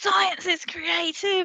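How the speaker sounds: high, slow, really loud announcing delivery.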